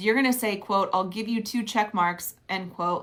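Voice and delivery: ordinary talk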